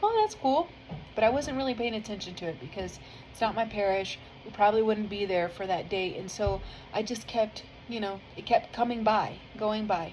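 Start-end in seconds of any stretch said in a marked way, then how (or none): 0.0-0.7 high, bright, excited reaction. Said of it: "I was like".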